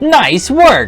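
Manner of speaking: loud, high game announcer. Deciding to give him a voice, the speaker does the Wii announcer voice. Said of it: "Just give him the Wii announcer voice".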